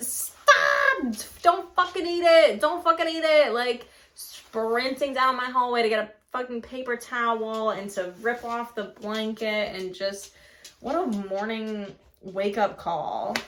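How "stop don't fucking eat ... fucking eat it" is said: high-pitched screaming. Retelling the morning the dog licked the mess: retelling a scream at the dog. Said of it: "and I'm screaming".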